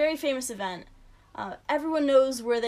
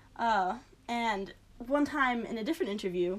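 normal talking voice

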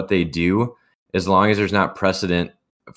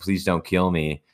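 mock crying, quieter; 4 dB quieter than usual. Retelling a man forced by cops to crawl: imitating someone crying. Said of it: "He's crying".

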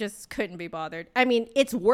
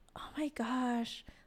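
very quiet, high, sighed, exasperated murmur; 5 semitones higher, 10 dB quieter than usual. Retelling what a lady said on hearing a sigh: imitating someone sighing loudly. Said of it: "sighing so loudly".

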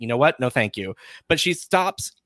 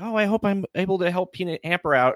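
high, anxious, really worried voice; 7 semitones higher than usual. Speaker recaps a scene, voicing a character who is worried; imitating a worried character. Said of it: "she's really worried".

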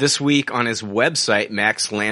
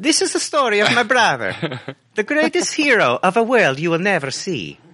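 very high-pitched voice; 10 semitones higher than usual. Reading a script's voiceover lines aloud as Luigi: Luigi voice. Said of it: "no more Luigi voice for me".

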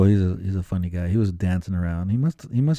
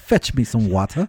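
put-on posh, lordly, fancy voice; 3 semitones higher than usual. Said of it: "Sounds very fancy".

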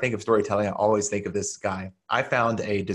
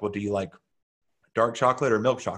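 mock-deadpan, flat delivery. Retelling the chemist chocolate-shop owner's reply, imitating a deadpan reply. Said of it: "he kind of just deadpan looked at me and was like".

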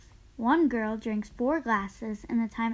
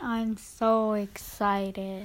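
forced, put-on, fake excited enthusiasm; 2 semitones lower than usual. Answering a request to tell viewers how excited: mock excitement. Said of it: "Tell them how excited you are".

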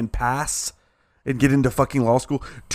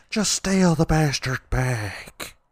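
very slow, drawn-out put-on woman's voice; 2 semitones higher than usual. Retelling what a woman said, doing an impression of her. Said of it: "I could do an impression of her".

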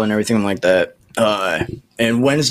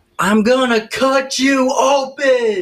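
put-on very high, shrill, drawn-out little-kid scream. Recounting a small child screaming out of nowhere at a game: retelling a child's scream.

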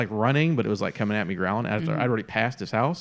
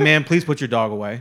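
really stern, firm, loud voice; 2 semitones higher, 5 dB louder than usual. Retelling what was said to a dog owner: imitating a stern voice. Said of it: "just real stern, like you talk".

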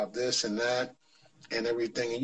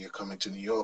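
soft, hushed half-whisper, just breath; 4 semitones lower, 8 dB quieter than usual. Retelling what a coach half-whispered while walking by: retelling a half-whisper. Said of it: "This is what he whispered to me".

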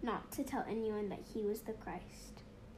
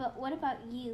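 ordinary talk

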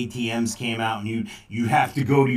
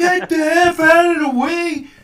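mock shouting, higher and louder; 9 dB louder than usual. Retelling yelling at the driver ahead in a toll line: retelling own yell. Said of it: "I yelled out and went".

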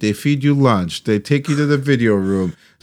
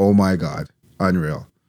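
normal talking voice

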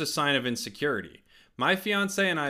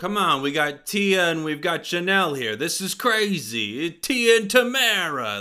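loud, smooth-talking schmoozy voice, wildly stretched out; 3 semitones higher, 5 dB louder than usual. Imagining how someone in a Hollywood room might talk; schmoozing Hollywood voice. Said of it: "That was my schmoozing voice".

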